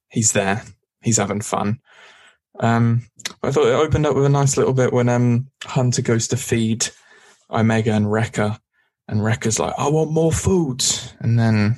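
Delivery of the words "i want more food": put-on, pitched-up New York accent. Recapping a scene where Hunter feeds Wrecker, quoting Wrecker in a New York accent. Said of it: "I don't know why he sounds like he's from New York".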